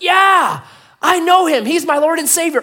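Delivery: very loud, very high shout. Telling a joke, a man shouts up to the one pulling him, retelling a shout. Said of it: "And the man shouts up".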